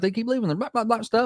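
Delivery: acted-out high, irritated, angry griping rant. Retelling the woman cussing on the phone call: imitating angry cussing. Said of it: "She started cussing at 'em in that phone call".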